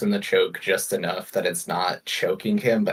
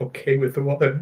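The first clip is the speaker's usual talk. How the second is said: trembling voice, higher pitch; 6 semitones higher than usual. Answering a character's question in character: voice shaking. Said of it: "with my voice shaking".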